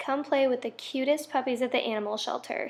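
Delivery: ordinary talk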